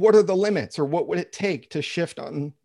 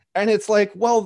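ordinary delivery

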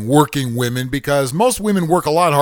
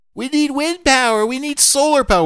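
much higher mocking eco-kook voice. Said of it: "conscious kooks are gonna come at me".

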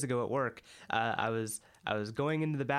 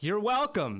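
loud, pitched-up, pointed remark; 9 semitones higher, 5 dB louder than usual. Retelling snapping at a man who ignored a held door: imitating saying it loudly. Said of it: "loudly, I was just like".

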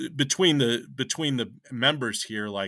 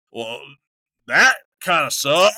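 put-on drunk man voice, louder; 4 semitones higher, 9 dB louder than usual. Retelling a drunk man who rated each of the band's songs, imitating a drunk guy. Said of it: "there was like a drunk dude".

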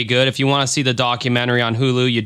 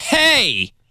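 combative, aggressive hey, pitched very high; 13 semitones higher than usual. Complaining about how Mike said hey, imitating Mike's aggressive hey. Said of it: "in that tone. Seemed very aggressive. You're like".

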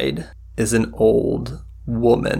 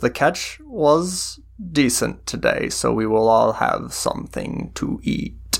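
put-on voice of a very old woman; 2 semitones higher than usual. Game master voicing the old woman who hosts the travelers for a meal: ancient old woman voice.

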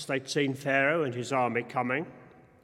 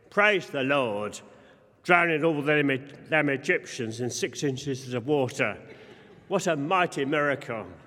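ordinary delivery

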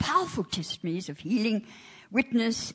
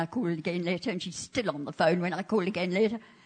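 usual speaking voice

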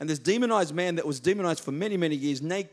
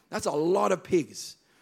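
ordinary talk

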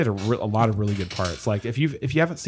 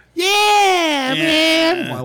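whiny impression, much higher pitch, slower pace; 7 dB louder than usual. Describing how Duncan Trussell's voice cracks the speaker up: whiny Duncan Trussell impression. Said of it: "Like whiny voice".

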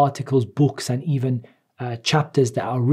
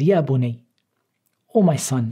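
put-on soft, gentle voice, slower. Explaining how a father addressed his son, the speaker retells it gently and softly. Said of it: "in a gentle and soft way".

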